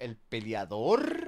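low, very slow, mocking imitated voice. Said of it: "se lo dijo así como".

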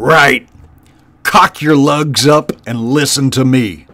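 harsh, snarling voice. The warlord addresses his followers crowded around him, snarling. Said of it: "Cluny snarled".

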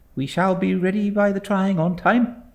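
cheerful, very high-pitched voice. Narrator reads a young woman's reply to her father, not looking up, gaily. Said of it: "she replied gaily".

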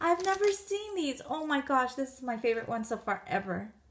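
thrilled, gushing delight with swooping sing-song pitch. Opening a Tokidoki package someone sent you, so excited. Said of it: "I'm I'm so excited".

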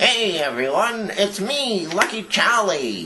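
high ventriloquist dummy voice. A ventriloquist introduces his restored dummy, speaking as it in the Lucky Charlie dummy voice. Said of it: "today I thought I would show you Lucky Charlie".

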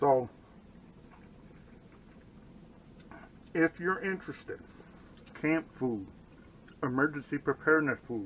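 speaking before swallowing. Speaker praises the dinner, then starts pitching it, talking with mouth full. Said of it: "let me swallow this".

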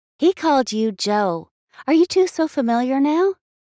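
voice ringing with amusement. Reading Scarlett's line to the narrator, with amusement in her voice. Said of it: "Amusement rings in her voice".

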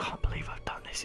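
very quiet, hushed, breathy whisper. Speaker retelling recording a little video at 2 in the morning, retelling a whisper. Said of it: "And I was whispering".

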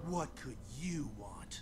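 very low-pitched, disdainful and contemptuous voice. In a game scene, a character answers someone calling his name, disdainful. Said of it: "So much disdain in his voice".

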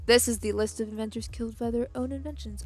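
clumsy, unconvincing attempt at a sultry, sexy voice. Reading a list title aloud, attempting a put-on sexy voice. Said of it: "I'm trying to do a sexy voice".

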